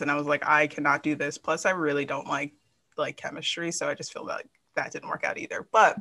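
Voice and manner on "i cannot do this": normal talking voice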